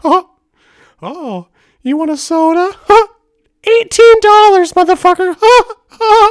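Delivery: very high, loud, squeaky voice. Showing how he shook down people on a trip, in a Mickey Mouse voice. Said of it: "you don't do the voice".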